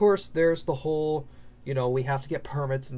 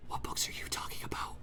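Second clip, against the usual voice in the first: hushed whisper, barely above a breath. Retelling how he leans down at a silent table and asks which books, whispering. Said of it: "he like whispers".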